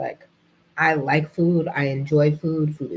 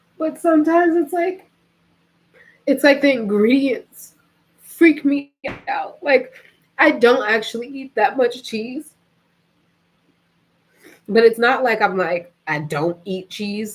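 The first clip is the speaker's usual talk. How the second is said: tearful crying speech, much higher pitch; 8 semitones higher, 4 dB louder than usual. Speaking on air about something that troubles them, crying while talking. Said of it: "I'm on air crying like this".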